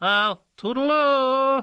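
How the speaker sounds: very high, squawky parrot-like voice. Reading a story where the administrator says goodbye: parrot-like voice. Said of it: "in a parrot-like voice".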